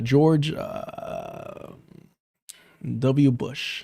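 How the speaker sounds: very slow, halting, breathy near-whisper pause on "uh". Ranting about pausing inside a president's name: pause with uh after george. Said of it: "between a fucking name, between a president's".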